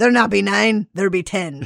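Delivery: put-on pirate voice and accent. Telling a pirate joke, voicing the pirate patient: pirate voice. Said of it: "I just like the voice".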